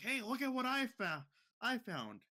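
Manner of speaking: yelled loudly and high. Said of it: "He yelled, yelled out".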